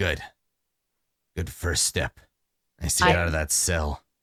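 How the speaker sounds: low, sneering jeering put-down. Narrating a game scene, voicing a man who sneers at the gathered group. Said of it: "he sneers".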